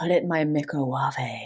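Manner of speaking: low, quiet, sultry voice. Joking about calling a microwave a microwave, the speaker does a sultry Nigella voice. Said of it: "to say it in like a really sultry voice".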